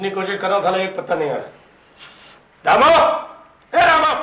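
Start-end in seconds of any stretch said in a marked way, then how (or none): 2.6-4.1 yelling, much higher, louder and slower. A character calls to someone, who asks why he is shouting, shouting a name. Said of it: "क्या चिल्ला क्यों रहा है?".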